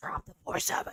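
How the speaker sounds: hushed, breathy, commanding voice. Urging a four seven to drop, attempting the Bene Gesserit voice. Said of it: "I'm trying to do the Ben and Gesserit voice".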